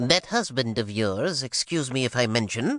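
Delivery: thin, reedy, complaining whine. Reading a story aloud, a man criticises the storyteller to Soraya in a thin, whiny voice. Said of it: "he would start in his thin, whiny voice".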